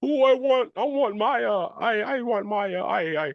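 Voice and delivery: fake blubbering sobs, very high and drawn out. Mocking how Kingpin cried the whole season: mock crying as Kingpin. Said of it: "He was really just crying the whole season".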